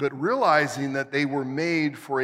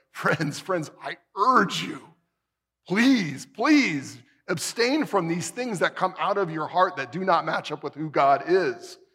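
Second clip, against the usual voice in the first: acted, mock-pleading, urgent tone; 3 semitones higher than usual. Speaker acts out a quoted plea to friends, acting out a pleading plea. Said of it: "you can hear the pleading in Peter's voice".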